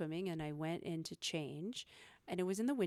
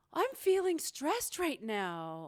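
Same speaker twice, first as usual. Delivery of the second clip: big, ridiculous over-the-top voice, higher and louder; 8 semitones higher, 4 dB louder than usual. Showing the third-person talk used in front of kids: big, ridiculous voice. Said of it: "You gotta make it big and ridiculous".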